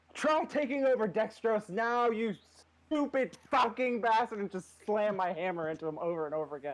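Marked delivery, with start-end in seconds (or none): 0.2-4.4 high, furious, raging in-character scream. Playing a character smashing an enemy with a hammer: in-character screaming. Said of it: "I'm just gonna start screaming".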